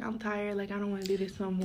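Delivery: plain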